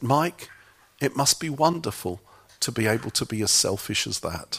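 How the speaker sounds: soft, quiet, gentle, compassionate tone. Retelling what another man said to the speaker, retelling quiet, gentle words. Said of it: "he said very quietly and very gently".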